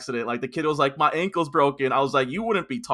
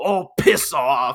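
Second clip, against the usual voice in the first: put-on furious, angry delivery in an Australian accent; 5 dB louder than usual. Retelling what a character says after being slapped, in a mock-angry australian accent. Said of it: "Like he's like all angry about it".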